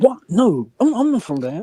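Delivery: high-pitched, shocked tone. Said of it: "and it's like".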